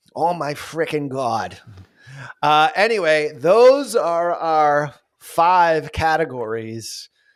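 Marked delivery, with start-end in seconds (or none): 0.2-1.6 thick, over-the-top, exaggerated Boston accent. While watching him on screen, the speaker mimics Ben Affleck's exaggerated Boston accent. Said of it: "exaggerating the Boston accent so much, you know, like this".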